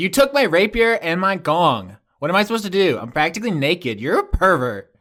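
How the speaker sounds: sharp, angry, irritated snap with swooping pitch. Voicing a character who snaps at Juniper: snapping angrily. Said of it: "Azana sna-, snaps at you".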